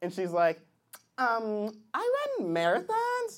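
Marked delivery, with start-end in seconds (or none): 1.2-3.4 put-on sing-song, swooping young woman's voice.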